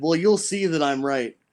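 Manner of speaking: plain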